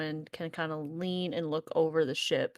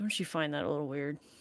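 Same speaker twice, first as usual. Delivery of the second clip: speaking low and hushed. Speaking in a manner that cannot be overheard, hushed so none can overhear. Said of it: "very manner that cannot be overheard".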